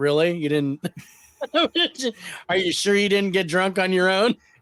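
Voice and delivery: mock, dry, needling, sarcastic tone. Retelling how an arrested man's mother questioned him, mimicking her sarcasm. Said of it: "just as sarcastic as her son".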